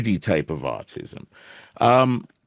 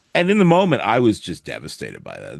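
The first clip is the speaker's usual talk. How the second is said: ordinary talk, nothing marked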